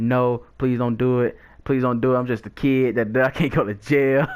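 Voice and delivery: acted crying and tearful begging. Retelling begging, as a kid, not to have the police called: retelling tearful pleading. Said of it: "I'm bawling my eyes out".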